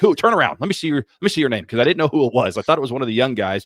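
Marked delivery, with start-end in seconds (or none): 0.0-1.6 mock hollering, pitched-up yell. Retelling yelling at the TV about a missed interception: retelling own yell at the TV. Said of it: "I was yelling at the T V like".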